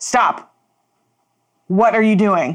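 very loud. Playing a character holding out their hands to stop someone, very loud. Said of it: "I say very loudly".

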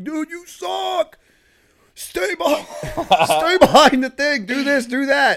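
very high, very loud, shrill, drawn-out screaming. Retelling how Chase screamed at him while he learned a game: imitating Chase screaming. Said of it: "Chase screams at me as I'm trying".

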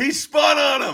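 shrill, very high, stretched-out acted holler. Retelling what the guy behind them yelled at a game: retelling a yell. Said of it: "the guy behind me just yells".

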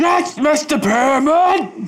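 put-on firm shouting. Acting out a character answering roll call at karate: mock decisive shout. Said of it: "answer very decisively when your name was called".

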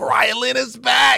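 facetious gush, very high, drawn-out fake excitement. Announcing news to the others: fake excitement. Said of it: "you keep saying it with excitement".

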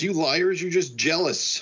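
mock light, high-pitched shout. Retelling a story where a character yells at the others: imitating a yell. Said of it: "And she yells".

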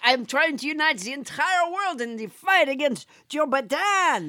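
put-on French accent, politician voice. Introducing a put-on character to the other speaker: French Trump voice. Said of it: "It is I, French Trump!".

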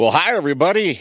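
loud, so-so broadcaster voice. Greeting everybody listening to Fox Sports Radio in a not very good Vin Scully voice. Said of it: "in my best Vin Scully voice".

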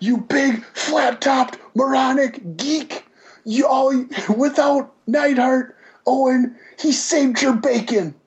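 high, screaming, ranting yell. Retelling insults shouted by Bruce Hart: imitating Bruce Hart yelling. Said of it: "He's just yelling and screaming".

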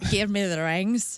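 put-on Irish-accented voice. Imitating Justin Theroux's line from Charlie's Angels: Justin Theroux Irish accent. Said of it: "It's Justin Theroux in Charlie's Angels".

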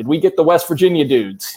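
high-pitched yelled-out voice. Retelling what a lake house neighbor yelled out from the boat: imitating a neighbor yelling. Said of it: "yelled out".

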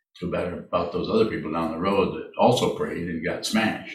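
usual speaking voice

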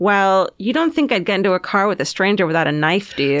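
ordinary talk, nothing marked

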